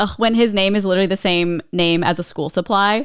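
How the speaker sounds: ordinary delivery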